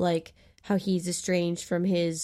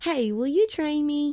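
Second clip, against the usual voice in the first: put-on American southern accent, pitched up; 9 semitones higher, 4 dB louder than usual. Retelling a film scene, a woman asks a man after a fight to train her, in a southern accent. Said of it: "I just wanted to do a southern accent".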